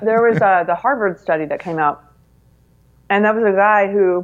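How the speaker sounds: talking while eating, mouth full. On a podcast, answering while eating peanut butter; talking while eating. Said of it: "I'm eating peanut butter".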